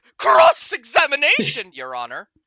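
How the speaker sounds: put-on, extremely enthusiastic delivery with gusto. Showing how the characters would say the line: imitating extreme gusto. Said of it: "say it with, like, extreme gusto".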